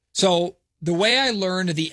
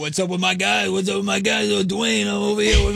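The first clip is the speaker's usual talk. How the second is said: gruff, rough, creaky voice with hyped energy; 3 semitones higher than usual. Imitating a radio caller who phones in every day: Dwayne impression. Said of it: "that's my Dwayne impression".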